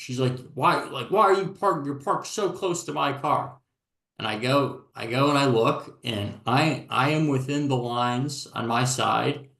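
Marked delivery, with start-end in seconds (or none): 0.5-3.6 acted-out high, shrill yelling in a woman's voice. Retelling how a woman yelled at the speaker over parking, imitating someone yelling. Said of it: "she just kept, you know, yelling at me".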